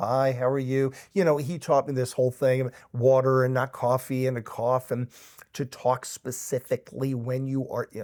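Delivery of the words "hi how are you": put-on nervous voice. Retelling being in the recording booth: imitating own nervous voice. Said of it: "too nervous".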